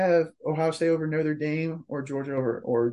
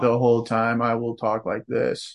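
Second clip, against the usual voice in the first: low, flat, droning, unvaried monotone; 5 semitones lower than usual. Co-host answers a worry about sounding monotone, in a monotone. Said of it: "don't think I was as monotone this time".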